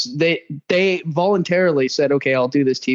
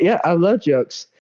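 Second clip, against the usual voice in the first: put-on woman's voice. Retelling a dating show conversation, imitating a woman from the show. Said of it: "I have to".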